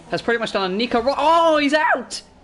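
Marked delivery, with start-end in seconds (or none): 1.0-2.2 surprised voice breaking into a high, loud crack. Calling a driver's crash out of the Monaco Grand Prix, voice cracking. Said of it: "nasty crash and voice crack for me there".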